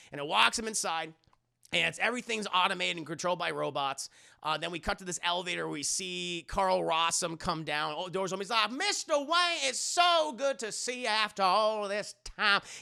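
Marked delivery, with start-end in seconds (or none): 8.7-12.6 put-on very thick, laid-on Southern accent, pitched up. Retelling a scene, voicing Carl Rossum greeting Mister Wayne in a thick Southern accent. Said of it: "He has a very thick Southern accent".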